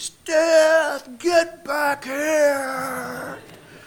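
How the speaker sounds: high, loud, drawn-out screaming yell.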